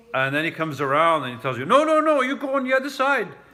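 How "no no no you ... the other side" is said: very high, shrill, loud yelling. Retelling how a taxi driver yelled at a wrong-side passenger: imitating a driver yelling. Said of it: "the guy is yelling at me".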